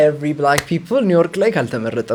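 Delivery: ordinary talk, nothing marked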